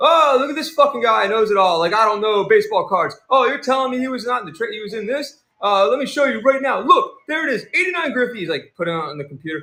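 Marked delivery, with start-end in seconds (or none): 0.0-8.4 play-acted, high-pitched, furious angry rant. Retelling how the seller went off on a viewer: imitating an angry rant. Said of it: "He automatically went off on me".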